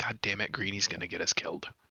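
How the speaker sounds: low, grumbling mutter under the breath. Complaining about a companion's risky plan: mumbling under his breath. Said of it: "mumber un-, under my breath".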